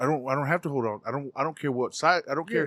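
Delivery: put-on annoyed voice. Retelling talking to a son while buying stuff: retelling an irritated reply.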